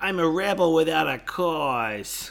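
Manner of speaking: put-on drawn-out, deliberate cartoon girl voice. Quoting a character's line from a show, in a Lisa impression. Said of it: "it's a very good Lisa".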